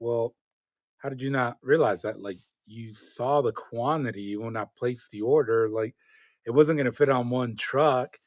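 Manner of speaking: usual speaking voice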